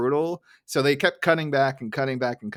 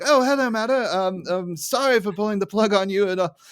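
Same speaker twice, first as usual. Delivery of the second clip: put-on British accent spoken at a raised pitch; 8 semitones higher, 4 dB louder than usual. Describing a scene, quoting Burns answering the phone: Burns in a British accent. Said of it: "I made him British all of a sudden".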